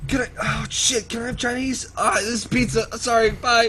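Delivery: high, loud, flustered voice.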